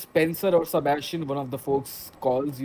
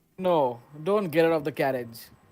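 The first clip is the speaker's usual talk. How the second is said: strong, heavy-set, burly, deep guard voice. Voicing a guard posted above who stops the carriage: burly, strong, deep voice. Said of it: "says a burly, strong, deep voice".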